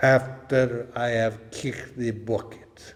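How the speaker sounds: put-on Polish accent. Quoting a professor's reply about his violin, in his Polish accent. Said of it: "said in his Polish accent".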